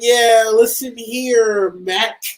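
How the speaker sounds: put-on American accent. Retelling a caller phoning in a tip, attempted American accent. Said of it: "he's trying his best American accent".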